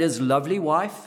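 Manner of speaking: ordinary talk, nothing marked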